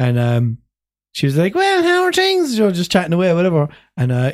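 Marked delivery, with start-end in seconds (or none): 1.5-2.6 put-on loud drunken chatter, pitched way up. Retelling meeting a girl in a takeaway: imitating a loud drunk girl. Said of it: "pure fucking loud drunk".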